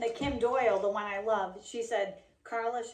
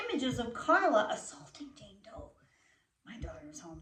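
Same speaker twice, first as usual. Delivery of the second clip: speaking in a whisper. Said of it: "that's why I'm whispering".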